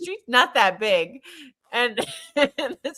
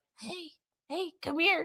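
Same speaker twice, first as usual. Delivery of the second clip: very quiet, high, faint, barely-there voice; 5 semitones higher, 12 dB quieter than usual. Show how Patrick sounds lately, since he doesn't have much of a voice, imitating Patrick's barely-there voice. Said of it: "he doesn't have much of a voice".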